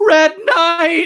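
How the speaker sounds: bold, loud, full shouted yell. Calling out the Red Knight's name to challenge him: yelling. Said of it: "And I yell".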